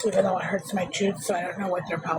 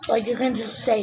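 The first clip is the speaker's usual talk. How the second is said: usual speaking voice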